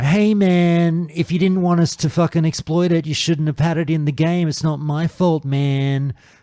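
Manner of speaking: put-on patronizing, condescending, dismissive tone. Asking a guest about players exploiting a game, the speaker mimics them: mock-condescending voice. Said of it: "I did the condescending voice".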